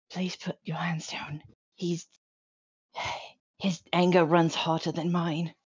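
gentle, quiet whisper. Tabletop player, in character, speaking to another character: whispering in Elvish. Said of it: "sort of whisper in Elvish".

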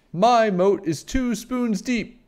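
very high, shouted out. Narrator reads a character calling out while comparing moats with a friend: shouted. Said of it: "Juan shouted".

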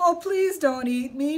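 high-pitched, loud, pleading voice. The rabbit answers the coyote who has just threatened him, pleading. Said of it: "pleaded Rabbit".

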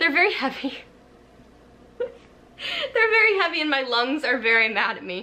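out of breath, winded. Speaker just lifted very heavy books, talking to viewers, out of breath. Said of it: "I'm out of breath".

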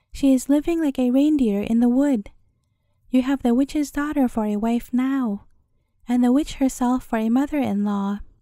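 ordinary delivery, nothing marked

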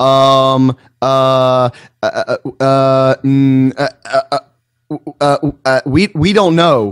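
very slow, halting, stuck stammering. Mocking an official caught without an answer: imitating a stammering DEA official. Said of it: "here's my best impression of the D E A".

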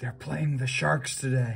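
loud stage whisper. Narrator reads Allie whispering to Grego loud enough for everyone; stage whisper. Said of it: "whispered to Grego just loud enough for everyone to hear".

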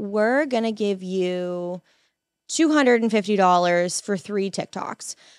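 ordinary delivery

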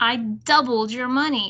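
sounding proud. Isabel announces to her friends what she did, proudly. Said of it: "Isabel said proudly".

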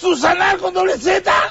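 slow, furious shouting with a harsh, scolding tone.

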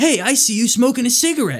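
very high-pitched, hyped, loud delivery. Walk up to interview people smoking cigarettes, imitating Scoozy's prepped-up YouTube voice. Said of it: "prepped up YouTube voice like".

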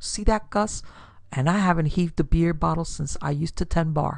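ordinary delivery, nothing marked

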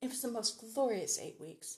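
ordinary delivery

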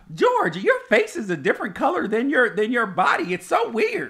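put-on very high, shrill, swooping old-lady voice. Retelling what the other speaker always says, imitating partner like a grandma. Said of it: "You make me sound like a grandma".

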